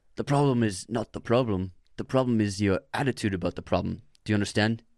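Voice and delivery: attempted, put-on British accent. Repeating a quoted line on request, in an attempted british accent. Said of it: "I'm trying to do British".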